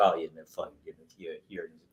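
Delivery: mock mumbling, spoken unclearly. Recounting a scene from a script, imitating someone mumbling. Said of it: "he doesn't really say anything very clearly".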